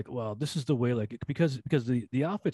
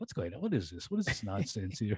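put-on outraged disbelief, lower pitched and quieter; 3 semitones lower, 6 dB quieter than usual. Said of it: "I was like".

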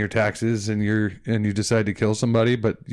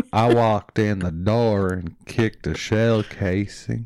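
exaggerated Texan drawl, slower. Retelling what a cop said about clearing a house, in a stereotypical Texan drawl. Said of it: "could it be any more stereotypical Texan?".

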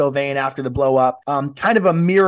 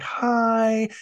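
put-on high childish baby voice with hi drawn out; 7 semitones higher, 4 dB quieter than usual. Retelling how she greets him at the pickup: high baby voice. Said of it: "greeting him in that high baby voice again, like".

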